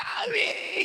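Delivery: hushed, breathy, whispered gasping cry on sharp inhale. Retelling the speech, breathing in while screaming mommy. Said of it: "It's like".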